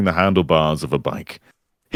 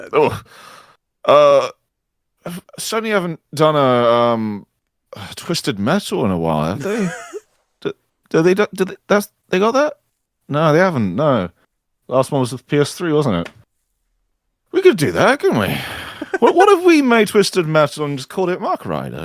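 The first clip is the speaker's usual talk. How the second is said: put-on high, rambling, tipsy drunken babble; 7 semitones higher than usual. In an improvised boardroom scene, a collapsing character gives a game pitch: acting drunk. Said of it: "sorry, everybody, I'm drunk".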